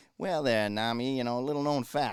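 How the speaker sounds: put-on loud, piping-up, know-it-all tone in a Boston accent. Imitating a know-it-all bar regular chiming in: Cliff Clavin impression, Boston accent. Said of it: "he had a kind of a Boston accent".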